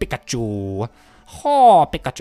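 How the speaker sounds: belted out loudly, swooping pitch, Chinese accent. Before healing in a game, the speaker does a quick Chinese Pikachu impression. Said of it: "I just done a Chinese Pikachu impression".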